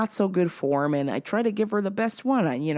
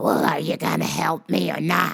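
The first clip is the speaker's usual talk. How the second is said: put-on smoker's voice; 4 semitones lower than usual. Retelling an older woman demanding help, imitating her Marlboro Red smoker's voice. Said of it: "with that Marlboro Red voice".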